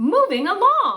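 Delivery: thrilled, very high-pitched, loud excitement. Saying a title again because it ends with an exclamation point: excited. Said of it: "we have to say it like we are excited".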